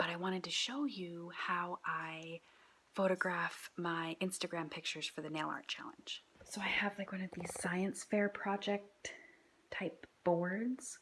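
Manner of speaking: very quiet, soft whisper. Someone nearby is still sleeping while you show your photo setup; whispering. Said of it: "I have to whisper because Milo is still sleeping".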